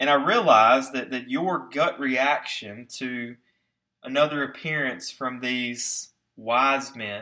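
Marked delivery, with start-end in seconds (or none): 6.3-7.2 sarcastic stress on "wise men". Preaching about Babylon's advisers, saying the words with sarcastic air quotes. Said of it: "we say that with very sarcastic air quotes".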